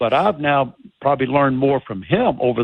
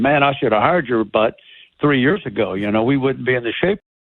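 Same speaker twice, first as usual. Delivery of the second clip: ordinary delivery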